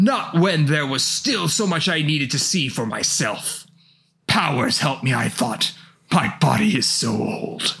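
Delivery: put-on hammy, overdone old villain voice. The speaker performs a character's lines, in old Xehanort's voice. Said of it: "I love doing old Xehanort's voice".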